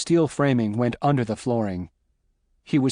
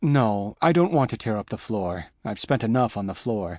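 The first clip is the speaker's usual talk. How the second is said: plain reading voice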